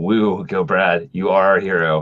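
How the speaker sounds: flat, unexcited cheering. Watching a game and cheering on brad, monotone cheer.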